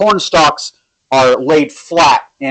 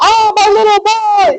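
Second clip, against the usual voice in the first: very slow, very high, drawn-out scream. Voicing townspeople running toward their found children: screaming.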